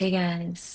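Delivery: put-on soft, subdued, low-key, withdrawn, sad-sounding girl voice. Acting out a super introverted sad girl persona: imitating a sad introverted girl. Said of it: "super introverted, like, sad girl".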